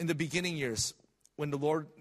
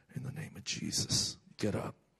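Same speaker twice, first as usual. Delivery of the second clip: put-on whisper, under the breath; 3 semitones lower, 3 dB quieter than usual. Speaker recounts praying at a casket, re-enacting whispering under breath. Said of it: "I whispered under my breath".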